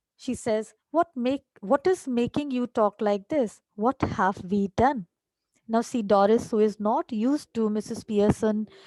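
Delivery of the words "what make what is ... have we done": usual speaking voice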